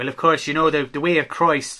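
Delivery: fake Irish accent, laid on thick. Imitating a video maker who now talks in a fake Irish accent: imitating Teachings on Heaven's fake Irish accent. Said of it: "he's talking like this".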